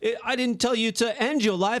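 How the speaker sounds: high, shaky put-on British accent.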